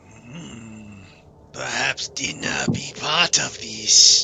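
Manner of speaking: big, low put-on dragon voice. Speaker voices the dragon looking toward the horse, in a dragon voice. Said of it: "The dragon looks over towards the horse and goes".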